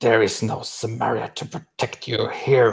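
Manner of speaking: menacing words hissed out. Voicing a character who threatens the people nearby after a kill: hissing. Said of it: "hissing to".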